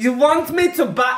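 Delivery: put-on very high, loud mother voice with slight German accent. Imitating the other speaker's mother buying a magazine, German-sounding. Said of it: "she was a bit German then".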